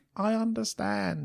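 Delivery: small, soft, hushed, creaky dinosaur voice. Describing a hoped-for ending, the speaker has Blue speak: little dinosaur voice as Blue. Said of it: "in a little dinosaur voice".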